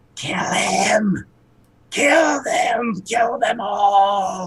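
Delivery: hushed, raspy voice full of rage, all drawn out. Narrating a scene, voicing a voice coming from a tombstone: raspy voice. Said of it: "You hear a raspy voice say".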